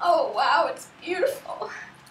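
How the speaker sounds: teary, emotional voice through tears of joy. Author seeing her own book for the first time: teary voice. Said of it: "I'm sorry for the tears".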